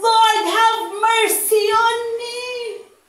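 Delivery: slow, drawn-out, held-back calling out. Retelling how the woman cried out to Jesus: imitating someone shouting. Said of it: "but he's shouting".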